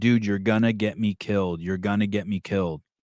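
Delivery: plain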